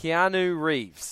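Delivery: very slow, deliberate, careful delivery. Saying a name you always get wrong, slowly and carefully. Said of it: "I'm going to really slow down to say this name".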